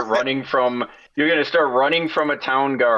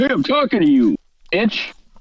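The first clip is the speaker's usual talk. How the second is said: put-on pitched-up, drunken male heckling voice; 6 semitones higher than usual. Retelling a street encounter, imitating a drunk guy calling out. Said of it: "looks kind of drunk".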